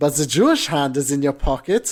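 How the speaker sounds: put-on German accent. Describing a kind of comedy sketch, speaking in a fake German accent. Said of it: "almost a fake sounding German accent".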